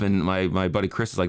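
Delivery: ordinary delivery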